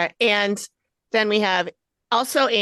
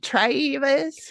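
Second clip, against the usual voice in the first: extra-heavy exaggerated southern drawl, pitched up; 5 semitones higher than usual. Showing how they used to pronounce the name travis: exaggerated southern accent. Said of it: "really extra pronounce it with the extra, like Southern accent".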